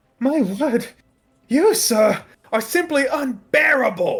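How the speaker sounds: very high, very slow, shrill, drawn-out enraged voice. Voicing a character who gets angry after missing the bear: angry character voice. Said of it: "he will get so angry, and he's like".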